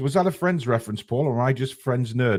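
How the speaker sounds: ordinary delivery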